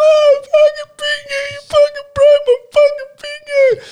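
very high, shrill, drawn-out pained scream. Retelling bending a younger brother's fingers, imitating brother screaming. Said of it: "He's screaming like".

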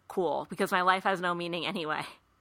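ordinary talk

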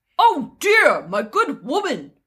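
put-on, mock-manly voice. After admitting she can't do an accent, trying to be a man: put-on man's voice. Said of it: "I'm gonna do my man voice".

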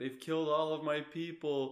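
mock crying, high, loud, blubbering wailing sob. Retelling what Bigfoot says in a video game: imitating Bigfoot crying. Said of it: "he's, like, crying".

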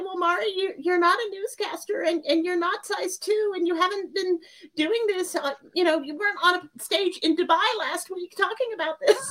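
silly, funny little monster-puppet voice. Speaker tells the story through her little monster, addressing herself, funny monster voice. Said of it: "I tell the story in the funny voice".

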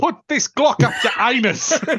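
put-on South African accent. Answering a request to say a line: put-on South African accent. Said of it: "say it in a South African accent".

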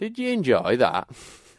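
put-on very thick, slow, broad Yorkshire old man accent. Retelling granddad's words after catching up with him at the van, broad Yorkshire accent. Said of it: "in the most Yorkshire accent and went".

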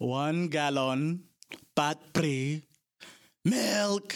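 put-on high, old dubbed martial-arts film delivery. Acting out a father phoning in a fried chicken order, dubbed kung fu movie voice. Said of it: "like I'm in some old, like, dubbed kung fu movie".

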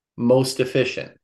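ordinary talk, nothing marked

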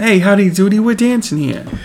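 put-on high, light Brooklyn accent. Recapping an episode, speaker quotes Topanga's line in Topanga's Brooklyn accent. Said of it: "Brooklyn accent?".

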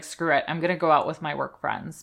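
ordinary talk, nothing marked

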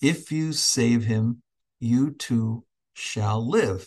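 lovingly spoken, full of affection. Speaker retelling what an appearing woman said to them, imitating a very loving tone. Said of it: "she said to me in this very loving tone".

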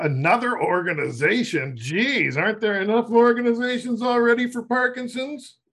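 high-pitched, skeptical, unimpressed tone. Host interrupts Tim to voice listeners' doubts, imitating an eye-rolling listener. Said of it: "A couple of people listening are rolling their eyes".

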